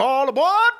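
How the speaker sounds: put-on Transatlantic accent. Calling like a train conductor in a fake transatlantic accent.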